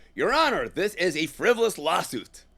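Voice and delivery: loud, exaggerated fake American accent. Speaker tries a courtroom line without laughing, in an American accent. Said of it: "that was my American accent".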